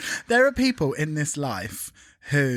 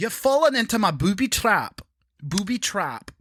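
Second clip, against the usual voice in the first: Scottish accent, pitched up; 6 semitones higher than usual. Asked to say the same line in different accents, now in a Scottish accent.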